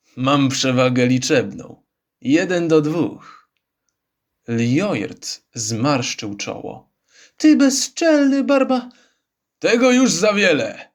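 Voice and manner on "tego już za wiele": growling outburst, much higher pitch. Narrator voicing a character's outburst after an insult in a duel, growled. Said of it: "Warknął Chrun".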